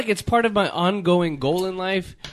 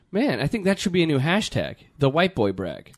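normal talking voice

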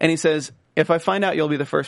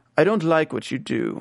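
put-on British accent. Recapping a scene, speaker acts out Armas talking at a table, British accent. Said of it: "I don't know why I'm putting on a British accent".

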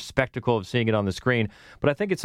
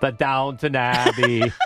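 put-on accent shifting into an Austrian accent; 3 dB louder than usual. Trying to say the movie title in that accent: attempted accent sounding like Schwarzenegger. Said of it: "the more you sound like Schwarzenegger".

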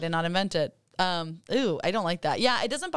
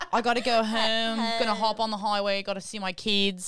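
put-on Philadelphia accent; 3 semitones higher than usual. Mocking an actress's accent in a show, to co-hosts: Kate Winslet's Philly accent. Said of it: "now we have to do the rest of the show in the Philly accent".

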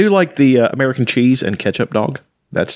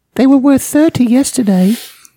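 fake British accent, very high and rushed; 11 semitones higher, 3 dB louder than usual. Acting out a scene of begging for more gruel: put-on british accent. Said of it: "I'm the only one with a British accent".

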